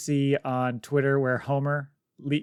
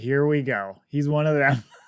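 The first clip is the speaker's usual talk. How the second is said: put-on disgusted tone. Retelling a character's line about another character: imitating a disgusted remark. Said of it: "with this look of just disgust".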